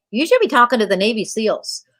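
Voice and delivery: ordinary talk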